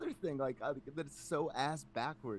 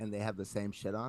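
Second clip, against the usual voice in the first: plain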